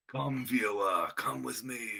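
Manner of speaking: grand, theatrical narrator voice. Reminding someone of the guy in a show you watched together, imitating his really dramatic voice. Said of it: "The guy with the really dramatic voice".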